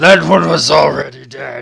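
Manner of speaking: very loud, raspy, rough, high-pitched yell. Voicing an enemy who yells after a missed shot: in-character yell. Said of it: "And he just kind of yells".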